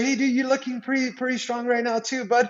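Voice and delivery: mock needling, teasing, taunting put-down tone. Retelling what gets said to a guy the speaker wants to get, imitating a taunting remark. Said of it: "and I'll be like".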